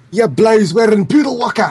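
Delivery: put-on Scottish accent. Joking with the others about an insult, saying it in a Scottish voice. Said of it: "you gotta say that in a Scottish voice".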